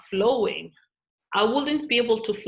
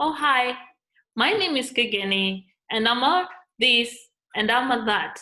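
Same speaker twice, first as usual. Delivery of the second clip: slow, self-centred, self-promoting advert announcer voice; 3 semitones higher than usual. Explaining what typical ads sound like, speaker demonstrates one: imitating a typical ad pitch. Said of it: "Have you ever seen an ad and it sounds like this?".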